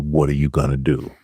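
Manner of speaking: deep voice. Retelling the father asking the question again: imitating dad's deeper voice. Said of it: "his voice got deeper than mine".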